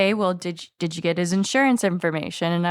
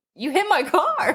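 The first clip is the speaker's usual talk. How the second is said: slow, mock dazed, stunned, disbelieving tone; 8 semitones higher than usual. Retelling a car owner's reaction after the speaker hit his car, imitating a shocked man. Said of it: "Like he was like in shock".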